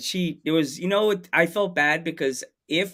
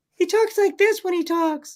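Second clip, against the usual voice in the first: put-on very high small child voice; 4 dB louder than usual. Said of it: "it sounds like a small child".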